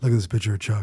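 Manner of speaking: voice dropped way down, very deep. Retelling a Shaquille O'Neal moment: terrible Shaquille O'Neal impression. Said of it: "that's a terrible impression".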